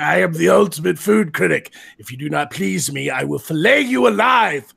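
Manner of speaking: loud, rough, judging proclamation. Picturing Magog in a chef hat as a food critic: imitating Magog as food critic. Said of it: "he's just like".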